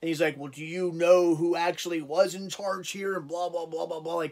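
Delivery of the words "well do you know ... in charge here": slow, tough, know-it-all voice. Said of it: "trying to be all tough".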